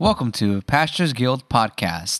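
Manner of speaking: mechanical robot voice. Taking a turn reading the podcast welcome in a voice contest: robot voice. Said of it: "robot voice".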